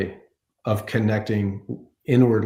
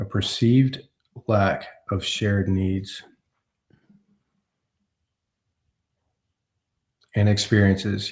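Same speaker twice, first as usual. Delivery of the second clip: very slow, deliberate, careful reading. Rereading a tricky phrase aloud, reading very slowly. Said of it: "I have to read that really slowly".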